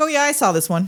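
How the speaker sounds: usual speaking voice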